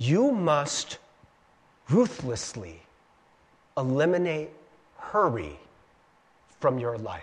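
very slow, low, deliberate speech broken by pauses. Quoting Dallas Willard the way he said it: very slow speech. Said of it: "he says very slowly".

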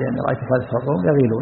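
ordinary delivery

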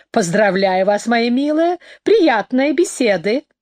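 ordinary delivery

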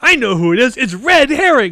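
high, loud, confident announcing voice.

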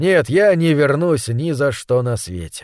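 ordinary delivery

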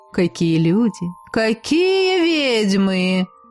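sarcastic, snide, very slow drawn-out drawl. Svetomira Elizarovna greets two late students frozen in the doorway with a sarcastic drawl. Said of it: "ехидно протянула Светомира Елизаровна".

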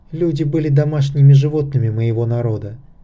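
ordinary delivery

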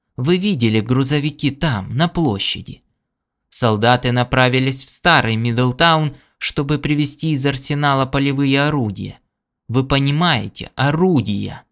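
ordinary delivery

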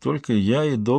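ordinary delivery

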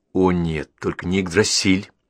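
ordinary delivery

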